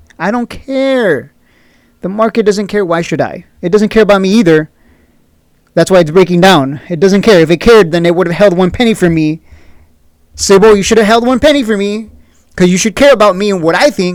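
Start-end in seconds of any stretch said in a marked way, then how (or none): 10.6-14.2 exaggerated, put-on, fake sarcastic tone. Pretending to tell the market it should have cared: put-on sarcastic tone. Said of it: "I'm being sarcastic".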